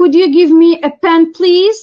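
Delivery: upward lift in pitch ending on please. Polite request example in an intonation lesson: rising on please. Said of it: "Polite request is going to be associated with rising intonation".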